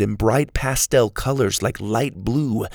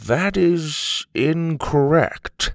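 drawn-out, slow, stunned and shocked tone; 4 semitones higher than usual. Grandpa corrects Susie's wrong answer about Ukraine: slow and shocked. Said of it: "he said slowly shocked".

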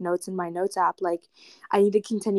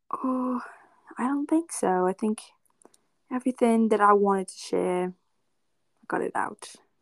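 vague, fake, loosely placed Australian accent; 3 semitones higher than usual. Guest answers the host at the end of a podcast: put-on Australian-sounding accent. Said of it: "Is that your Australian accent?".

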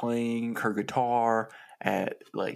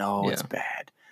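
mock, acted, super sad voice; 3 semitones lower than usual. Pitching a story idea, voicing the heroine's reaction as mock super sad. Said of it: "she's like kind of like super sad".

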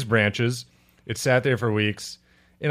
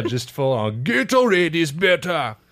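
put-on Jamaican accent, dropped in suddenly; 4 semitones higher than usual. A speaker acting out a story about a brawl: Jamaican accent imitation. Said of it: "I don't know why I made that Jamaican".

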